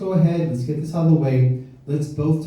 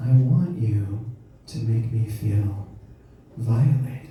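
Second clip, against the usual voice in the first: imitated whisper, lower pitch; 5 semitones lower than usual. A man retells what his lady whispered to him in bed, retelling her whisper. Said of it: "she whispers. She says".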